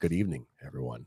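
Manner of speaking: hushed, soft, low late-night pillow-talk murmur. Recalling a local radio host, doing a soft Alan Allman pillow-talk voice. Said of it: "He would just talk so soft in the microphone".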